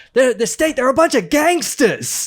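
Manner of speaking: worked-up rant, very loud and very high-pitched shouting. Imitating a lecturer from his YouTube lectures: imitating Michael Parenti shouting. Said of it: "start shouting".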